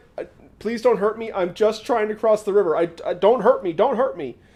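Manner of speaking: mock terrified old man voice, stumbling, pleading. Retelling a legend, voicing a terrified old man at a river: imitating a terrified old man. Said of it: "This old man is terrified".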